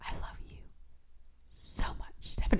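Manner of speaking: intimate, very soft, breathy whisper. Retelling how he said the line to her, whispered. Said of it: "he says it like, ... he whispers it".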